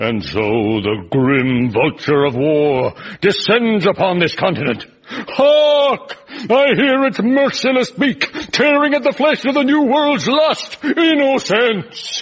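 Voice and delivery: roaring every word, slow, high and climbing. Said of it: "What was all that stuff you were bellowing".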